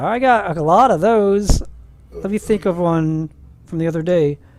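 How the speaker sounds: normal talking voice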